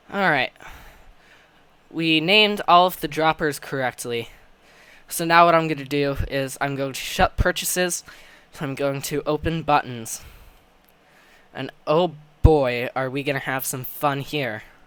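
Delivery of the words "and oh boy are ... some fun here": fake cheer laid on with heavy, dripping sarcasm. About to open the buttons and repeat the process: heavily sarcastic. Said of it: "I am being as sarcastic as I possibly can".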